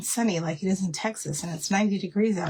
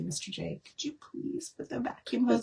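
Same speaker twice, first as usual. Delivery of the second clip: mock-sweet, put-on polite voice, quieter; 4 semitones higher, 6 dB quieter than usual. Retelling what she usually asks at home, mock asking really nicely. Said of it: "I ask really nicely".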